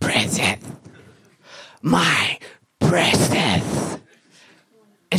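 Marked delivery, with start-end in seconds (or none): 0.0-4.0 soft whisper, under the breath. Speaker acts out the woman who said yes in an imagined proposal, imitating a whisper. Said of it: "she starts whispering".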